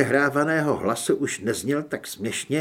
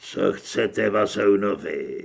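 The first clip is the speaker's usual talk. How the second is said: deep, forced rasp, deliberately disguised voice; 6 semitones lower than usual. A masked man sits down opposite the others and speaks: deliberately deep raspy voice. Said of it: "záměrně mluvil hlubokým chraplavým hlasem".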